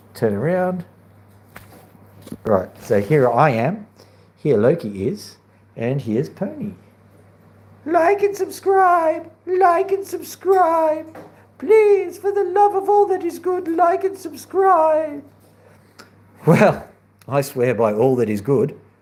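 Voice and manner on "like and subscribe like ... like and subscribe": squeaky, very high-pitched voice. Introducing Loki and Pony on video, the host speaks for Pony: silly Pony voice. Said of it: "I didn't do that voice. It must have been Pony".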